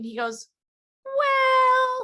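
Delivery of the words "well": high, loud sarcastic tone. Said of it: "he was just being sarcastic".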